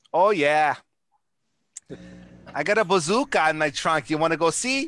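put-on Minnesota accent in a gangster voice. Showing how actors play gangsters on the show, in a minnesota accent. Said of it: "that Minnesota accent".

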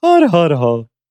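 put-on Irish accent. Showing what the stereotype accent sounds like: stereotype Irish accent. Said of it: "the Irish one is like".

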